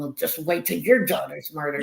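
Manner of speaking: put-on muttering under the breath. Retelling what was said to people refusing flyers: retelling own muttering under breath. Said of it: "under my breath, I was going".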